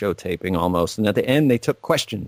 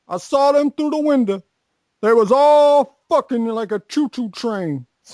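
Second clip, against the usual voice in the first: put-on very high-pitched, drunken, rambling voice; 4 dB louder than usual. Retelling a viral clip of a drunk old man: imitating Rackham Willie drunk.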